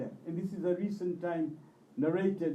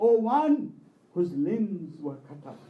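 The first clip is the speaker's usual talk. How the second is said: put-on, loud, tearful weeping and grieving cry; 2 semitones higher, 6 dB louder than usual. Retelling an Imam's lament for his uncle: imitating someone crying. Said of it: "Imam is crying and saying".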